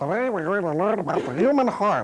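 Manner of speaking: vintage educational film narration. Showing how voice can change a story, old filmstrip narrator voice. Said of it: "sounds like those old film strips".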